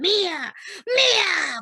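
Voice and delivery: booming, resounding demon voice, drawn-out "mía". Recounting a demon driven out by prayer, voicing its parting words: booming demon voice. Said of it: "con una voz así retundante".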